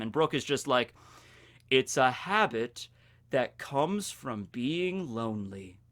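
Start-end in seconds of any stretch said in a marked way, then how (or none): 1.7-5.7 put-on deadpan, much lower, quieter, slower. Recounting a scene from an English dub, imitating Brooke's deadpan delivery. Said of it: "Brooke delivered in such a deadpan way".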